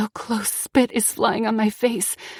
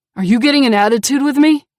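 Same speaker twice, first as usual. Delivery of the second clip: very loud, deadly menacing tone; 3 semitones higher, 9 dB louder than usual. Reading a story where the abuser questions the narrator: deadly tone. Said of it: "he asks in a deadly tone".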